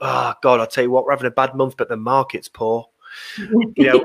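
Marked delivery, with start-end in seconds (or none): none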